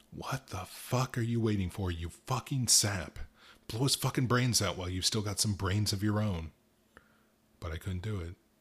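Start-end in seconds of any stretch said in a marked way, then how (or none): 0.1-6.5 hissing, words spat out. A narrator voices a new guy speaking to the narrator, hissed. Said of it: "The new guy hissed at me".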